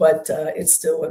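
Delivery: ordinary talk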